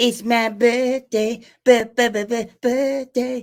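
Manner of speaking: acted cartoon child voice. Opening a birthday podcast episode: Cartman voice. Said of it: "I gotta do this in our Cartman voice".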